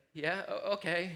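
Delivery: mock, small, slightly scared voice. A dad retelling his daughter's answer about checking under the bed, mock little-scared reply. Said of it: "she gets a little scared".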